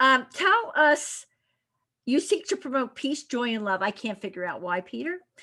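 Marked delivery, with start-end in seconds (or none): 3.8-5.2 low, soft, playful teasing. Interviewer teasing the guest before asking about his programs, teasing. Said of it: "I'm teasing you".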